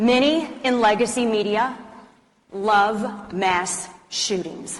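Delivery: very slow, each word spaced apart, love drawn out. Say something people will call controversial so everyone in the back can hear, speaking really slowly. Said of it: "I'll say it really slowly".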